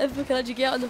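talking while laughing, words broken up.

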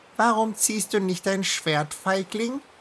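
piping, squeaky, high mouse voice. Narrator reading the mouse challenging another character: squeaky mouse voice. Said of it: "Piepste die Maus".

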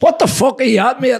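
mock very high, confrontational shouted yell. Retelling shouting at an undercover soldier: retelling a shout. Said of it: "and I was shouting at him".

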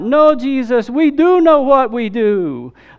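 put-on, very high, very slow, drawn-out loud yell. Retelling how a lady in a play's crowd yelled out: imitating someone yelling out loud. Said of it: "Like that, real loud".

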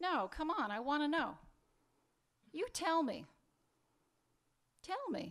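crying, insistent tearful pleading with swooping pitch. Pressing the other speaker to reveal what was said: crying while pleading. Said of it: "Don't cry".

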